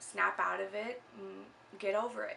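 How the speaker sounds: usual speaking voice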